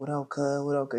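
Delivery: casual, light, slight country twang. Retelling meeting a best friend on the first day: Daquan Smith's country twang. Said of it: "He got a little country twang to him".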